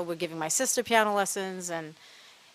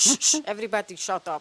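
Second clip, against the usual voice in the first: put-on Latin American accent. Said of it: "in his Ricky Ricardo accent".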